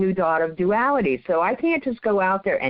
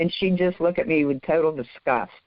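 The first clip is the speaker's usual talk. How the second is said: plain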